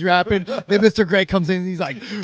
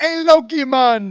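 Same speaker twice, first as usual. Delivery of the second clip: put-on Jamaican patois-style accent; 6 semitones higher, 3 dB louder than usual. Teasing Mister Gray about his accent, the speaker mimics him: imitating Mister Gray's Rasta accent. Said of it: "Rastafarian accent".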